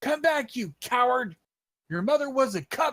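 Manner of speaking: high-pitched, shouted yell in a character voice. Yelling in character at a fleeing bugbear chief: yelling in character. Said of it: "I yell".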